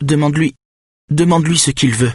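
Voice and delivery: frightened voice. A narrator voices a middle-aged woman in the hallway, in a frightened voice. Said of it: "dit-elle d'une voix apeurée".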